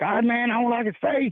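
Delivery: riled-up, fired-up, very high outburst. Retelling a fired-up outburst while watching a game: imitating own fired-up outburst. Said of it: "Marcus just got me fired up".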